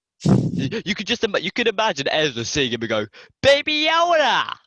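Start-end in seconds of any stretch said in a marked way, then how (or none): 3.4-4.5 put-on American accent, very high pitch. Imagining Ezra seeing Grogu and naming him: Ezra in an American accent. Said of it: "That's my amazing American accent".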